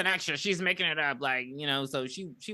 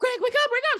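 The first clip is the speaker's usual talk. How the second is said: very high, frantic, panicked pleading; 6 dB louder than usual. Retelling a movie scene, a character trying to wake a limp body: imitating someone freaking out. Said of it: "she's freaking out".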